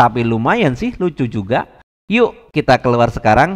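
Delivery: ordinary delivery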